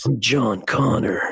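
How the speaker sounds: put-on, very low, deep voice. Taking a turn after being told to go ahead, in a put-on deep voice. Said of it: "just did a deep voice".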